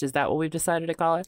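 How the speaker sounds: plain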